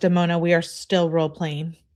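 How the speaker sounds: normal talking voice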